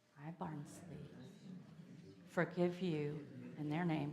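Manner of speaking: soft half-whisper, breath only. Leading a forgiveness prayer aloud with listeners: half-whispering. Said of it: "I'm whispering that".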